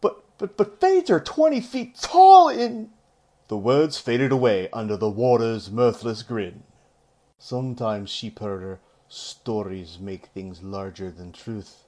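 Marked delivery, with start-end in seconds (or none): 0.0-2.9 shrill protesting outburst, very high and loud. Narrator reading a novel, a sheepherder protesting to a warder, exclaiming. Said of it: "Rand exclaimed".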